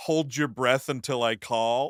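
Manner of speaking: plain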